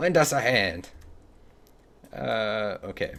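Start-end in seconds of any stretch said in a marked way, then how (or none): 0.0-0.9 tentative, put-on fantasy dwarf voice. Speaker tries out a character voice for their game: dwarf voice. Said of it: "We'll work on a dwarf voice".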